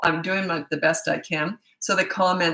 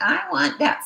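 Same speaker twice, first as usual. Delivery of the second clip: put-on very high, whining four-year-old voice; 10 semitones higher than usual. Speaker shows how to mimic a whining four-year-old's tone back to them. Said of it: "mimic it".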